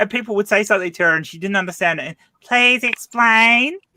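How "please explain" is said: loud, high, heavy Northern Queensland drawl, puzzled. Imitating a politician's line from interviews: Pauline Hanson impression. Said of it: "Northern Queensland drawl".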